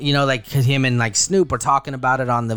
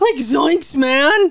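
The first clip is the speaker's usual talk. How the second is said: very high, full put-on cartoon voice; 14 semitones higher, 4 dB louder than usual. Sliding into a cartoon impression while telling a story, Shaggy voice. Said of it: "slid into Shaggy right there".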